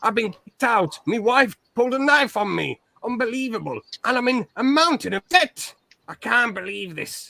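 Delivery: put-on voice, pitched very high. Retelling the start of a phone call, speaker does the John Fury voice. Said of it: "I just did the voice of John Fury".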